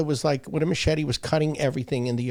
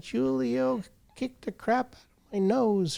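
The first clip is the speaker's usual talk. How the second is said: mock sobbing little boy voice, high, drawn-out; 9 semitones higher, 3 dB quieter than usual. Retelling how the young son ran up: imitating a crying child. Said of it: "He's crying".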